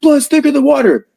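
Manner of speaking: put-on furious screaming. Retelling a man screaming at his sister, imitating a furious scream. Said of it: "he's furious and screaming at his sister".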